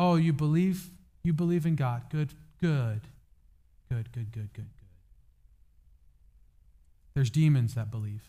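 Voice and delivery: put-on, openly sarcastic delivery. Speaker acts out James's remark to those who believe: sarcastic voicing of James. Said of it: "James writes sarcastically".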